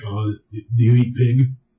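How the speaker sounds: creepy, drawn-out, very low and slow voice. Imitating a caller who asked about eating pig: creepy Jim Florentine voice. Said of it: "creepy voice, creepy, creepy voice".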